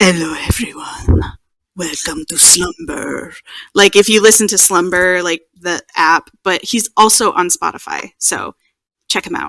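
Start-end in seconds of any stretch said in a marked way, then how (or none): 0.0-3.3 voice dropped deep and husky. Describing a favourite sleep podcast's opening, imitating the French Whisperer's deep husky voice. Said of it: "he's got this like deep husky voice".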